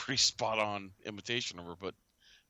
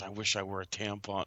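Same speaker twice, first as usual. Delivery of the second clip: put-on whispering. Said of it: "He's whispering".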